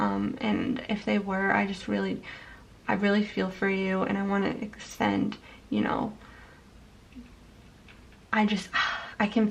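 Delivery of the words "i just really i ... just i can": moved, emotional speech, faltering with words breaking off. Speaking to listeners who had difficult childhoods, getting a little emotional. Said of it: "I'm getting a little emotional".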